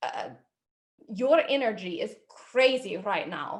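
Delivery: loud put-on Russian accent. Telling a story while a partner calls out accents, russian accent.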